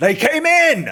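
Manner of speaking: very high, shrill, very loud shouting call. Voicing a guard inside the castle: shout from behind. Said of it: "you hear a shout behind you".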